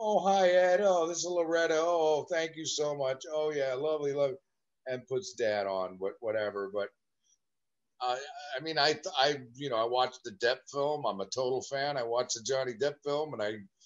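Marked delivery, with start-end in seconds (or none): 0.0-4.4 play-acted, gracious, sweetly polite, slightly raised pitch. Retelling Mom taking a producer's call: imitating someone speaking nicely. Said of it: "gets on and nicely".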